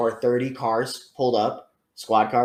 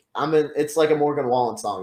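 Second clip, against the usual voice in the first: ordinary talk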